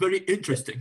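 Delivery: put-on English accent on the phrase. Imitating doctor Cárdenas saying a phrase: imitating doctor Cárdenas, British accent. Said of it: "diría el doctor Cárdenas".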